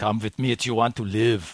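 put-on Austrian action-hero accent. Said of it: "That looks like Arnold Schwarzenegger".

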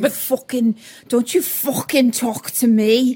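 put-on somewhat Welsh-sounding accent. Imitating how someone talks, in a put-on Welsh-ish accent. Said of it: "similar to the Welshish or something".

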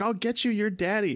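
acted-out frustrated anger, very high-pitched, exasperated. Describing a movie scene, quoting the woman answering the boy, imitating frustrated anger. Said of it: "this like frustrated anger".

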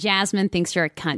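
plain American accent. Performing the same line on request in another voice: American accent as Jasmine. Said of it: "This is so jarring with an American accent".

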